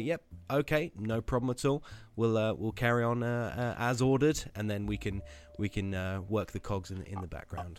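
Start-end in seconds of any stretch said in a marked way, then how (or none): none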